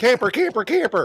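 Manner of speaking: loud yelling, hollering. Shouting out his safe word to the others, yelling. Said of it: "I am I am yelling".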